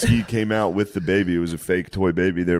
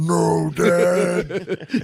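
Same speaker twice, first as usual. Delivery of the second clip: put-on crying giant wrestler voice, higher; 11 semitones higher than usual. Imitating Big Show at his dad's funeral: imitating Big Show crying. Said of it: "ten feet tall and crying".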